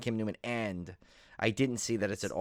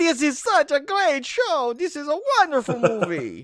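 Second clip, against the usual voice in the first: put-on very high, loud, swooping, wacky kids' TV host voice; 8 dB louder than usual. Talking about a kid's show host, quoting him, bad impression of him. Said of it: "that was me throwing out my impression box".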